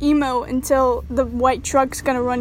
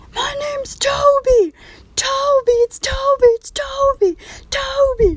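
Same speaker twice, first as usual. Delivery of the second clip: put-on very shrill, insistent, drawn-out repeated yelling; 13 semitones higher, 3 dB louder than usual. Speaker retelling a road incident, retelling the other man yelling. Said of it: "the guy just starts yelling".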